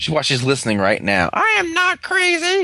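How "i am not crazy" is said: mock very high, very slow, drawn-out shout. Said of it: "I have a disease where I yell when I talk".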